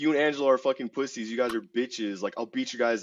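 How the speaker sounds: put-on loud, aggressive, confrontational voice. Retelling a confrontation in a restaurant: imitating someone talking loud and aggressive. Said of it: "talking hella loud too".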